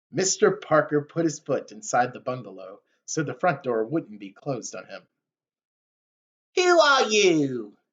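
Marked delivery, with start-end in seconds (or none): 6.5-7.6 barked through the nose. Narrator reads Mister Parker at the bungalow door, barking nasally at Ben. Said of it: "He barked nasally".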